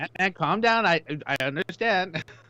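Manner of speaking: usual speaking voice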